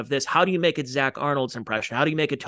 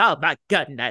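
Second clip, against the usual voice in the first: put-on quivering seventies comic voice; 3 dB louder than usual. Showing the quivering voice of seventies comics: quivering Paul Lynde voice. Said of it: "that quivering voice".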